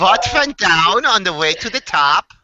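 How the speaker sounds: high-pitched Icelandic accent. Reading a radio show tagline when asked to, Icelandic accent. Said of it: "in the Icelandic accent".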